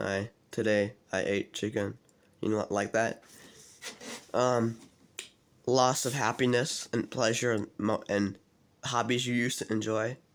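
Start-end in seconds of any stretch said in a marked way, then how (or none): 0.0-2.0 low, flat, toneless, one-note monotone. Listing depression symptoms and giving an example of the voice, low monotone voice. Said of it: "deepened voice, like low, low, monotone voice".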